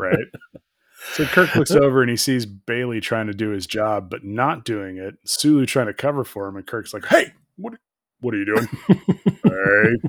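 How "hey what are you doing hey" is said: slow, stern, scolding voice. Retelling Kirk confronting Bailey and Sulu, in Kirk's dad voice. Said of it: "He gets his dad voice out".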